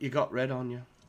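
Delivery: imitated English accent. Quoting a favourite horror comedy line after getting red paint on: put-on English accent. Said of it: "I love your English accent".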